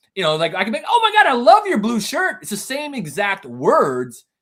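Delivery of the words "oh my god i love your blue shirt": very high, loud, gushing, enthusiastic excitement. Showing how the same words change meaning by delivery, saying it enthusiastically. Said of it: "if I say that enthusiastically".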